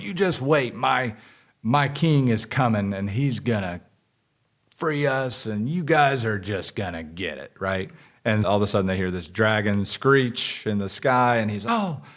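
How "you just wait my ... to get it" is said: defiant, forceful delivery. Retelling a show's scene where a captured prisoner taunts his captors, imitating him screaming. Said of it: "he's screaming".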